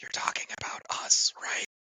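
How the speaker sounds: faintest possible, barely audible, breathy whisper. Leaning in while another character is still talking: whispering as quietly as possible. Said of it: "just whisper as quietly as I actually can".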